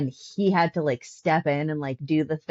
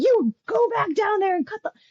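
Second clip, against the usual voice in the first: shrill, high-pitched, exasperated, frustrated screaming. Complaining about a character's death, the speaker re-enacts screaming at them. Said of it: "I was screaming".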